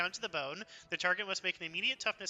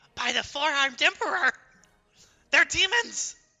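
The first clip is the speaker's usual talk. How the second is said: very loud, high, squeaking panicked cry; 8 semitones higher, 11 dB louder than usual. The narrator voices cultists reacting as you arrive: squeaking voice. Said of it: "in, like, a squeaking voice".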